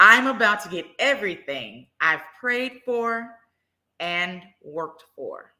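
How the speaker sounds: slow, bold, confident proclamation from the chest. Repeating the affirmation after telling listeners to say it with their chest: said with your chest. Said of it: "say it with your chest".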